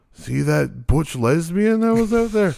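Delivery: put-on, laid-on-thick North Dakota accent. Retelling what their dad said at the show, the speaker uses a North Dakotan accent. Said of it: "He just went from North Dakotan to".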